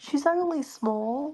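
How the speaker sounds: very high half-whispered voice. Voicing a character who answers a stage whisper: half-whisper. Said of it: "Zephyr whis-, whispers back".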